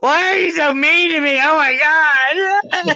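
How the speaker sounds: put-on very high tearful wail, drawn out. Retelling a visit from the youngest son: imitating own past crying. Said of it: "I ended up crying and going".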